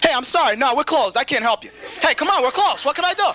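high, curt brush-off manner. Acting out turning people away at emergency room doors: pretending to be hospital staff. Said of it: "so I could go like this".

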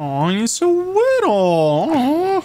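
put-on high, slow cooing baby talk.

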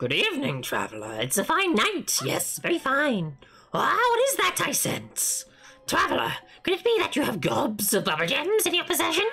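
high, swooping, sing-song funny voice. A streamer voices a little game character greeting a traveler: Luki funny voice. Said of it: "I'm doing a funny voice for a funny little guy".

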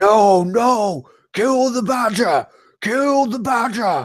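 very high, roaring beast-like yelling shout. A narrator voices a wolverine roaring at the rats: roaring wolverine shout. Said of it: "the wolverine is roaring at these guys".

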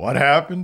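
restrained, understated, low-key delivery. Retelling an awards-show moment, imitating Al Pacino: very quiet Al Pacino voice. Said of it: "You hear Al Pacino very quietly say".

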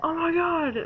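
mock overjoyed, high-pitched, excited freaking out. Retelling own reaction to seeing the footage: retelling own freakout. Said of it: "I was freaking out going".

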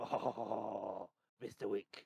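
hushed action-film villain voice. Running a game for players, voicing a character: John Wick villain voice. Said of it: "like the John Wick villain or something".

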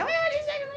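freaking-out shriek.

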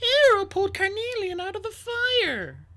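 muted, subdued, very high voice, last word drawn out. Narrator reading Sunny's reply after the queen's sharp order; subdued. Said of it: "her voice more subdued than usual".

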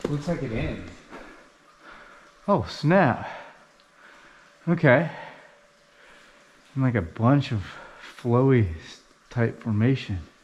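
panting, breathing hard, out of breath. Climbing up a mountain with a companion, describing what they see; breathing hard. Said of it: "(breathing hard)".

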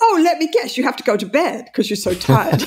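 put-on sarcastic tone. Speaker reenacting own reply in a couple's argument, retelling a sarcastic attack. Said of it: "I'm on the attack".

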